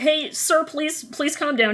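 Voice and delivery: customer service voice. Retelling how a character calms an angry man: customer service voice. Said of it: "He gets his best customer service voice on".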